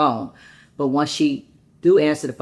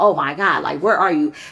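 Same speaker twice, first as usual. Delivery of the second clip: mock-hysterical woman's voice; 2 semitones higher, 4 dB louder than usual. Speaker retells a woman's reaction over a missed turn-in date, imitating someone hysterical. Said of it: "It was more like she was hysterical".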